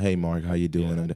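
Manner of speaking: put-on flat, droning one-pitch monotone. Imitating how someone greets mark, in a flat monotone greeting. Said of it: "in monotone".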